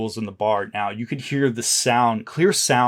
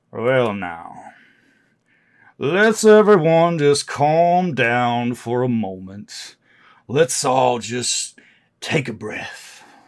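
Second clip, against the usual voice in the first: drawn-out, lazy, unhurried drawling voice; 3 dB louder than usual. Voicing a man who speaks out to calm a crowd, low drawling voice. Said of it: "this sort of a drawling voice now. This sound of sort of like a, a low voice".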